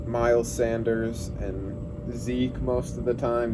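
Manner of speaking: ordinary delivery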